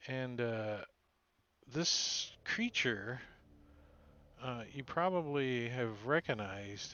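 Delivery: very slow, stretched-out, drawn-out talk. Narrating while searching for a picture of the creature, talking real slow. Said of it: "I'm talking real slow".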